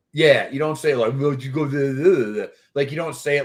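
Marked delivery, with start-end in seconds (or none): 1.2-2.6 put-on punch-drunk boxer voice. Showing how not to answer reporters' questions: punch-drunk snarky Rocky voice. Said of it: "like you're, you know, Rocky and punch drunk and being snarky about it".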